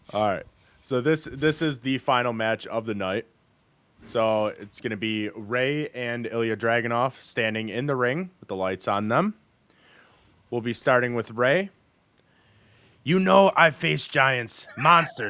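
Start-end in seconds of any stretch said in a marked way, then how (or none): 13.0-15.3 congested, stuffed-up voice, as with a head cold. Voicing Rey to open the final match: voicing Rey like Becky Lynch with a cold. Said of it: "You sounded like Becky Lynch with a cold".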